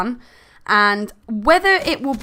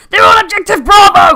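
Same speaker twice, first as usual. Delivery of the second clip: very loud, very high screaming battlefield soldier voice; 11 semitones higher, 12 dB louder than usual. Comparing in-game announcer voices, Modern Warfare 2 screaming soldier. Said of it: "they're like screaming at you".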